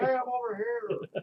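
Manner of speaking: very high, very slow, drawn-out yell. Acting out being a difficult VIP in the game: mock yelling through a bullhorn. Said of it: "I'm yelling".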